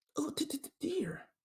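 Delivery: very soft, barely audible stammering voice. Trying out voices after Eeyore, admitting it's weak: Piglet voice. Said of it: "my piglet sucks too".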